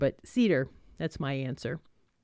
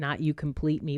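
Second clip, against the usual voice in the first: normal talking voice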